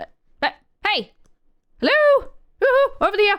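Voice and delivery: very high, sing-song, swooping called-out voice. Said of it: "is whistling at them".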